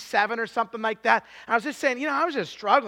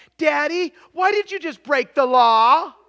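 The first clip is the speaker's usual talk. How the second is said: put-on very loud, small child's voice; 4 semitones higher, 8 dB louder than usual. A father retelling a car ride, quoting his child in a little five-year-old voice. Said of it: "I hear this little 5-year-old voice".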